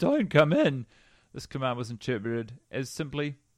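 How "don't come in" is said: play-acted high shout with voice cracking and breaking. Retelling a knock at the bedroom door, reenacting a shout with a breaking voice. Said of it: "shouting in my breaking voice".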